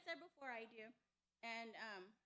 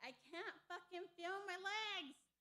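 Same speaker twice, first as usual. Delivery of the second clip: acted high scream, words stretched long; 6 semitones higher, 4 dB louder than usual. Retelling being stuck and unable to move, imitating her own screaming. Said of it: "I'm screaming at him".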